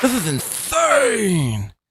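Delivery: voice like slowed-down playback, dragged out. Showing how you hear his voice, Patrick Melton voice at quarter-speed playback. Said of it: "how I hear Patrick's voice".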